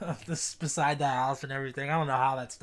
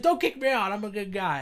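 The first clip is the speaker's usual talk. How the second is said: loud, high, put-on screamed voice; 8 semitones higher, 5 dB louder than usual. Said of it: "screaming and stuff like that".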